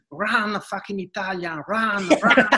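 put-on screaming, pitched high. Retelling how a coach on the bench screamed during a match: imitating someone screaming. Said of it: "screaming at me".

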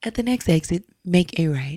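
put-on GPS navigation system voice. Told by a friend to try it, the speaker does a GPS navigation voice impression. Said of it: "she's like this tone".

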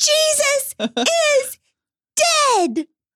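put-on high child's scream. Retelling a small child's cry from upstairs: imitating a child screaming. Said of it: "her little voice is screaming".

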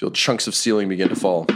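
plain

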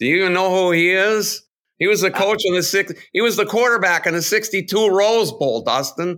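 loud Wisconsin accent, pitched very high. Talking sports history to Dustin, in a Wisconsin accent. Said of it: "Your Wisconsin accent's not bad".

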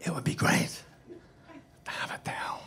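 put-on whispered actor voice. Retelling what an actor whispered close up: imitating Christopher Walken whispering. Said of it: "And he whispers to me".

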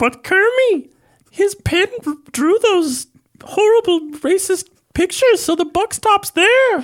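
very high, loud animal puppet voice. Answering a co-host on a show about Hergé, in a Miss Piggy voice.

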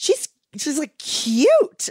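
high, gushing inner voice.

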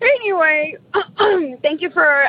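high, tearful, choked-up voice.

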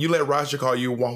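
normal talking voice

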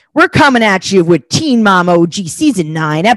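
loud on-air radio dj announcer patter. Opening the show by announcing an episode in a radio DJ voice. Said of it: "that's what I'm trying to be like".

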